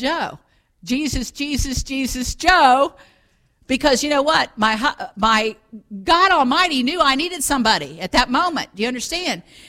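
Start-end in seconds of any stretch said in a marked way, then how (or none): 0.0-2.9 mock yelling, drawn out long and slow. Recounting calling out for Joe, the speaker imitates their own yelling. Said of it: "and I'm yelling".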